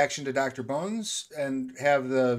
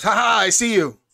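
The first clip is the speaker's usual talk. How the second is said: very loud, high, booming badger chieftain voice; 7 semitones higher, 10 dB louder than usual. Voicing the chieftain who spots a sneaking player: badger chieftain voice. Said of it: "chieftain even turns to you and goes".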